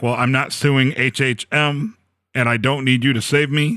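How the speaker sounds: ordinary talk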